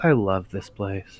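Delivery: very slow, hushed half-whisper under the breath. Playing a character who looks up at the opening door, half-whispering under breath. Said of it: "whisper under my breath".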